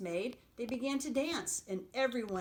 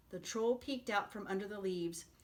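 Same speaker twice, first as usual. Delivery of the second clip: ordinary delivery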